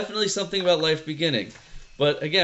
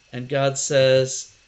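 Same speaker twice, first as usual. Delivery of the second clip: ordinary talk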